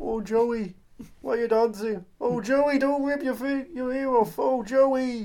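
put-on Brooklyn accent. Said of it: "I'm Brooklyn Jim Broadbent".

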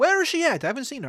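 put-on Scottish accent. Improvising a bit about looking for the queen, slipping into a Scottish accent. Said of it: "I'm going Scottish now".

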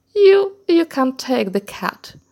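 said through laughter. Reading a story aloud, the brothers answer the youngest son, laughing. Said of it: "laughed his brothers".

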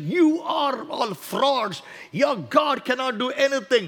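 put-on angry, furious cry, held back, normal speaking strength. Retelling his own past outburst at the preachers: imitating his own past screaming. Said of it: "I was screaming at them saying".

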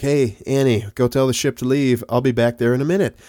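normal talking voice

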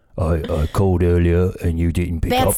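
mock posh British servant voice. Dubbing a man on the phone: Batman butler impression, Michael Caine. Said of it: "your Batman, uh, Butler impression".

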